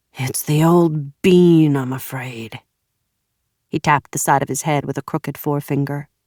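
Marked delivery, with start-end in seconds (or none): 0.2-2.6 exhausted, weary, very slow and drawn-out. After a sigh of genuine exhaustion, the toad answers Evan, weary and exhausted. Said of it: "and strong-armed orderlies transferred [name] to a gurney, / he said finally. / his voice was a dry rattle. / his voice was a dry rattle. / his voice suddenly silky".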